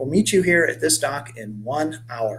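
ordinary delivery, nothing marked

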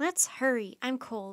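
ordinary delivery

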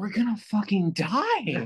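mock terrified, slow, scared dread. Retelling waking up in the car while a friend drives late: retelling own scared words. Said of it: "scared expression I could".

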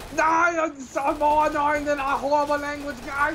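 put-on very high, squeaky voice with a poor German accent. Joking about why Hitler hated the MP44, as Hitler in a terrible German accent. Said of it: "That's the worst German accent I've ever heard".

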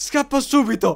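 panicked yell, high, slow and loud.

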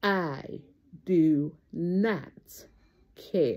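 nice and slow, low, deliberate, each word spaced. Speaker has listeners repeat after them, said nice and slow. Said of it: "I'm going to say it nice and slow".

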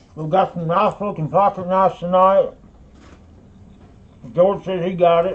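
talking with mouth full. A live sale host announces tonight's pocket knives while eating, talking with mouth full. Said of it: "I'm talking with my mouth full".

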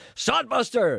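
high, loud roared delivery. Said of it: "he turned round and roared".

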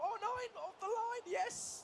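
very high, climbing pitch. Commentating as the ball nears the line, voice rising higher and higher. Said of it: "your voice went higher and higher".

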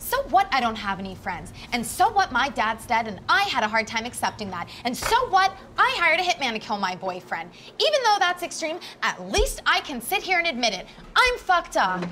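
loud, rising, angry outburst. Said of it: "Lower your voice".

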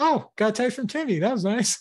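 high, light, breezy, carefree, oblivious chirp.

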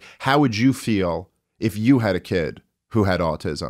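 plain

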